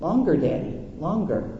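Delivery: ordinary delivery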